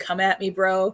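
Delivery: plain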